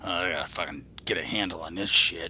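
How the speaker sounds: put-on soft, snide sneer muttered under the breath. Retelling what a guard said as they walked past: imitating a snide remark. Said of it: "this snide little fucking bastard go".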